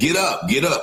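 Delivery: high, sharp, mild mock yell.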